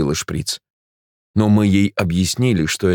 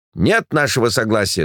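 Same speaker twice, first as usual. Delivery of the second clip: plain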